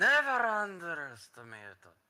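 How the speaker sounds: loud, drowsy, drawn-out sleepy voice. Narrating a voice calling from the other room, in a loud, sleepy voice. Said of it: "A really loud, sleepy voice from the other room says".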